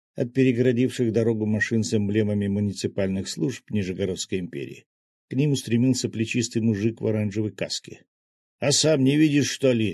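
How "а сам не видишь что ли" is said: high-pitched yelling, hollered. A worker in a helmet yells back at a man who asked what happened. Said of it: "заорал он".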